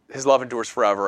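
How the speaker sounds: ordinary delivery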